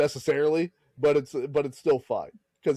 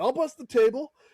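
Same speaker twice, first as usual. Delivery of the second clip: put-on shrill, very high-pitched, furious yelling rant; 11 semitones higher than usual. Retelling the Goodfellas scene where he yells: imitating Joe Pesci yelling. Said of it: "and then he starts yelling at him".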